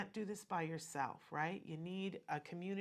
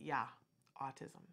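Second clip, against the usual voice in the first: put-on heavy, thick German accent, older man voice; 4 semitones lower than usual. Retelling what an older doctor told a parent: imitating a thick German accent. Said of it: "and with her German accent, she said".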